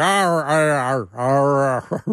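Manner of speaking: put-on Pittsburgh accent, "arr" drawn out.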